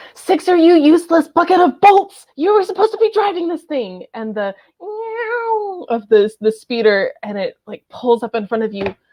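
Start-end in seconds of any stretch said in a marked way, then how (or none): 0.2-4.1 very high, rushed yelling. A voice on the comms yells at a teammate: yelling over the radio. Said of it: "There's yelling over the comms".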